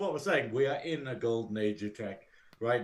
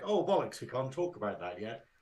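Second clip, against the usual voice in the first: plain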